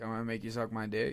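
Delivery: ordinary delivery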